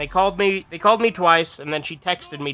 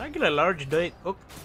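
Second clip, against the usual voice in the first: put-on heavy Spanish accent, "coke" said like "cock"; 2 semitones higher, 5 dB quieter than usual.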